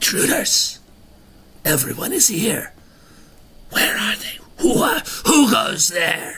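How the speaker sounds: rasping, very high, challenging voice. Running the game, the narrator voices a figure in the room: a raspy yelling voice. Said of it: "A raspy voice yells out".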